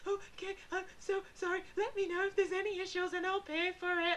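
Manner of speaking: high, sobbing, tearful crying voice. Retelling apologising at a neighbour's door about the flood: imitating her own past sobbing. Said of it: "like this".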